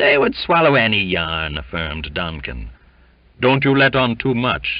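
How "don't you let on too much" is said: weary, tired, admonishing, cautionary tone, higher pitch. Gasping, he warns his companion in reply, in an exhausted voice. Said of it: "admonished Jimmy in an exhausted voice".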